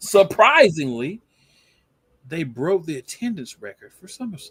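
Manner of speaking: high, swooping, extremely sarcastic tone. Announcing a broken attendance record after a two-night show: heavily sarcastic. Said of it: "this is sarcastic as possible".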